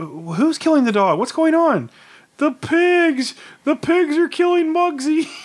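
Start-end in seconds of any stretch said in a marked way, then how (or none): 2.4-5.3 mock crying, much higher pitch and slower pace. Speaker retelling what she said when she came running in, imitating someone crying. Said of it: "came running in the house crying".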